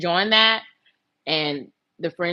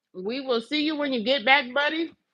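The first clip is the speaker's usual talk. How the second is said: talking through a mouthful, pitched up; 8 semitones higher than usual. Chatting to the viewers while eating, talking with a mouthful of food. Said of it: "I'm talking with a mouthful of food".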